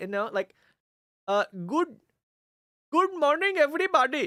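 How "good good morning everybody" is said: imitated Indian accent. Describing how some people talk, then an imitated indian accent. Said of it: "to do like the Indian accent".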